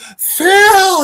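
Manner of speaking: very high, loud, drawn-out shrieking wail. Retelling a scene where a woman turns to argue with phil, imitating her scream. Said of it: "And she screams".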